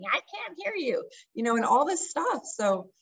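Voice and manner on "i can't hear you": acted, very high-pitched screaming yell. Retelling how a coach screamed at them on stage: imitating someone screaming. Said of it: "screaming at me".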